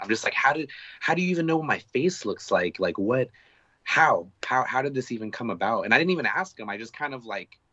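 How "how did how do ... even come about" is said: starstruck, mind-blown disbelief, tripping over words. Retelling being recognized by a band member: starstruck disbelief. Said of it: "I'm fangirling hardcore".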